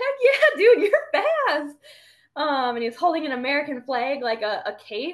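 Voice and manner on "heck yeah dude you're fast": very high, loud, swooping, pumped-up excited cheer. Retelling cheering back at a running boy: retelling own pumped-up cheer. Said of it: "I started getting pumped up for him".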